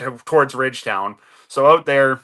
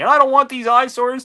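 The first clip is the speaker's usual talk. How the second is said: play-acted furious yelling, very high-pitched; 11 semitones higher than usual. Retelling an angry landowner confronting a worker: imitating a man screaming. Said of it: "He's screaming at me and yelling at me".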